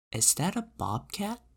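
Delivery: so soft it's hardly heard. Reading Henry's question to the narrator, very soft, barely audible. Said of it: "in a voice so soft I can hardly hear him".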